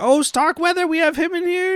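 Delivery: mock thrilled, eager, very high excited voice. Retelling a receptionist's line from the movie, imitating someone excited. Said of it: "And she's all excited".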